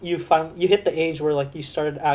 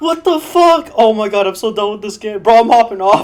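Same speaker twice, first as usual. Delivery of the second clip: mock crying in frustration; 6 semitones higher, 10 dB louder than usual. Acting out the listener missing shots in a game for hours, imitating someone crying in frustration. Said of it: "like fucking crying about not hitting your shot".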